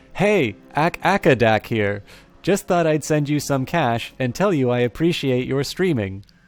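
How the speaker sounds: silly text-to-speech readout voice. Reading a viewer's message on stream, speaker uses the Twitch alert reading voice. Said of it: "a time that it's appropriate for silly voices because I know there's a very special way that Twitch alerts read these things".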